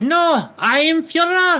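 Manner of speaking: very high, squeaky, tiny little voice. Playing Hitler answering someone who is sticking him up on the wall, in a little squeaky Hitler voice. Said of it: "a little squeaky voice".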